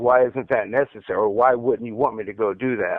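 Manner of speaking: ordinary talk, nothing marked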